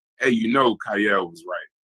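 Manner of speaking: soft, quiet, understated, low-key voice. Retelling what someone said after screaming earlier: imitating someone speaking quietly. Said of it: "And then quietly".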